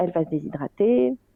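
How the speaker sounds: anxious, panicked, fretting voice. Retelling a moment when the baby would not drink: imitating own panic. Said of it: "j'ai commencé à flipper en me disant".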